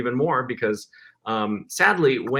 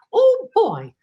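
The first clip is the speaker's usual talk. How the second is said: very high, loud, squeaky cartoon voice; 6 dB louder than usual. Recalling high school friends, the speaker shows what he'd say in a Mickey voice. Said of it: "I could do Mickey's voice".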